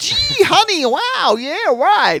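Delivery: brash, booming, loud, very high American voice. Before handing over to another speaker, mimicking a typical loud American. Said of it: "he's typical loud American".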